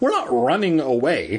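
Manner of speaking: ordinary delivery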